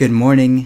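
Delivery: deep, low work-phone voice. Showing an old work phone greeting in a deeper voice. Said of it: "show you what my voice sort of used to sound like".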